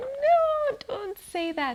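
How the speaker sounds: high, loud, cringing outburst.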